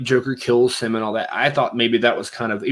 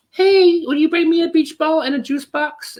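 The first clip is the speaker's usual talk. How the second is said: put-on very high, childlike small kid voice. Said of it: "this like childlike voice".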